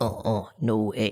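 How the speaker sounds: deep gut voice. Describing how their gut refuses something, the speaker voices it: deep gut voice. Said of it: "And with that deep voice too".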